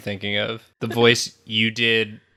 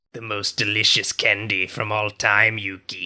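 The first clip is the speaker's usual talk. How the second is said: put-on creepy boy voice. Playing a candy-crazed Joey Wheeler addressing Yugi: creepy Joey Wheeler voice. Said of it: "why are you talking like that?".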